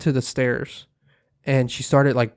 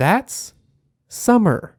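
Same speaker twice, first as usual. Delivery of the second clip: put-on super clear, high young girl's voice; 6 semitones higher than usual. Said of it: "just super clear in a girl's voice".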